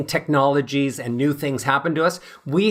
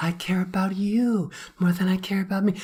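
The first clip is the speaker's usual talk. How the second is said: breathy, airy, quieter put-on therapist-style voice; 4 semitones higher, 5 dB quieter than usual. Explaining how people feel trapped in their voices, the speaker demonstrates an airy therapist voice. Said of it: "if I speak really airy".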